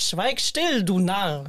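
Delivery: put-on voice, every word drawn out very slowly. On a podcast, showing they can talk like him: Thorsten Sträter impression. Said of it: "Ich kann sprechen wie Thorsten Sträter".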